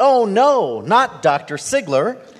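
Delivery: sudden blurted exclamation. Retelling a man reading the program and seeing the speaker's name, reenacting blurting out. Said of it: "he just blurted out".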